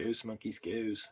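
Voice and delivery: put-on Philadelphia accent, vowel on go laid on. Making a craft monkey and joking: put-on Philadelphia accent. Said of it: "Sounds like a Philadelphia accent".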